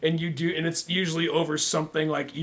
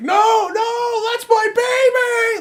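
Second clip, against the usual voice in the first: very high, very slow, drawn-out, anguished, desperate pleading. Imagining the games being taken away: mock desperate plea from a movie. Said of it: "Like in some Holocaust movie".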